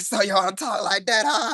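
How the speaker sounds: put-on Boston accent. Talking about how people from Boston speak, the speaker tries a Boston accent. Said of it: "they got this Boston accent".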